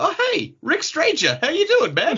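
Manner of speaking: very high, cheerful voice.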